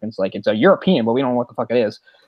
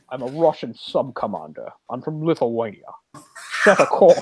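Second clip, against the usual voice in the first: put-on plain Scottish accent throughout. Mocking a film captain who makes no attempt at a Russian accent: Sean Connery impression. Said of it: "Sean Connery, making no attempt".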